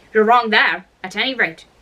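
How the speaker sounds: ordinary delivery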